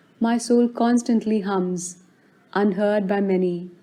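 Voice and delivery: plain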